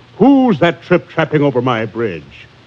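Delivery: ordinary delivery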